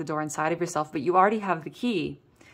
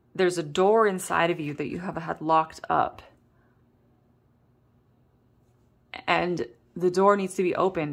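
voice on the verge of cracking. Telling listeners about a door locked up inside them, voice starting to crack. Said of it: "my voice was like almost starting to crack".

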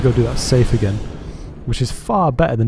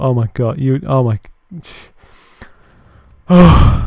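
out of breath, panting, louder; 2 semitones higher, 7 dB louder than usual. A streamer reacts after a frightening gameplay moment, out of breath. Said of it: "I'm out of breath".

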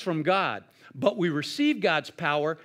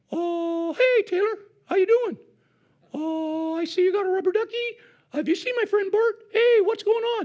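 very high, chirpy, playful hand-puppet chatter; 14 semitones higher, 4 dB louder than usual. Recalling using a hand puppet to talk to Taylor in the bathtub, Ernie puppet voice. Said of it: "I'd put my hand in the Ernie puppet".

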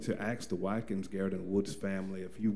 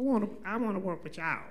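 tiny, itty-bitty, very high little voice; 12 semitones higher than usual. Retelling how a mortuary student stopped by asking for a job, imitating Terrica's itty bitty voice. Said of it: "in that little itty bitty voice that she had".

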